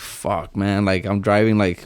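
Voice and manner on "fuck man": put-on worried tone. Retelling driving a passenger who won't wake: imitating own worried words. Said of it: "worried at this point".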